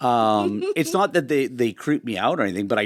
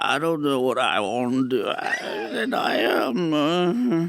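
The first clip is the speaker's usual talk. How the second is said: put-on, mock sedated and drowsy-sounding voice; 5 semitones higher than usual. Speaker mocks a man who doesn't talk like a Kennedy, Bobcat Goldthwait on Valium. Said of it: "you sound like Bobcat Goldthwait on, you know, on on Valium".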